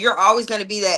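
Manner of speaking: ordinary talk, nothing marked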